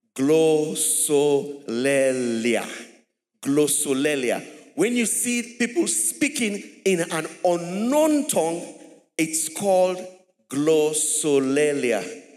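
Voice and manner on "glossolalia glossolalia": very slow, drawn out and deliberate. Speaker teaching listeners to pronounce a term, said slowly. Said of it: "Let us say that slowly".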